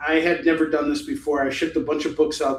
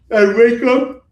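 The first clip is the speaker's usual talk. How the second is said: very loud, high words spoken through a yawn; 9 semitones higher, 9 dB louder than usual. Speaker describing their daily routine, yawning mid-sentence: yawning. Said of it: "I'm so sorry, I'm yawning".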